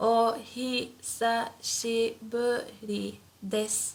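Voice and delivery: slow, deliberate, syllable-by-syllable お久しぶりです. Teaching a japanese phrase, showing how it sounds said slowly. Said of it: "But slowly it would sound like this".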